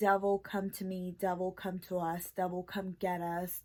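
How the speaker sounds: imitated whispering. Translating what she whispered to the devil: imitating someone whispering.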